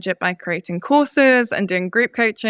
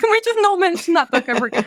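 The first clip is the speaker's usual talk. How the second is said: very high, swooping, stressed, crying tearful voice; 10 semitones higher than usual. Retelling refusing to talk with a coach about a book: imitating own past crying. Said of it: "quite stressed at the time and just crying".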